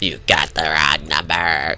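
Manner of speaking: very low, icy, chilling cold voice. Speaker imagining his mom answering the phone, imitating mother's cold voice. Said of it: "saying in a cold voice".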